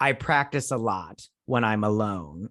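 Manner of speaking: plain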